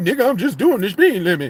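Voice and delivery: put-on nonchalant tone. Mocking how a man answered a woman yelling at him, imitating a nonchalant tone. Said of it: "Look how he say it so nonchalantly".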